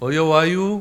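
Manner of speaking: Korean Chungcheong regional dialect accent. After the Gyeongsang and Jeolla versions, the speaker demonstrates the phrase in Chungcheong dialect. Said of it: "충청도는".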